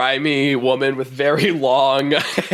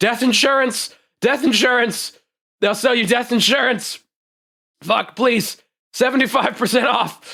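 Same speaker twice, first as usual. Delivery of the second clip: very high, shrieked, full-lungs screaming; 9 semitones higher than usual. Narrator voices a woman running a fire sale: screaming at top of lungs. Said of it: "she's just screaming at the top of her lungs".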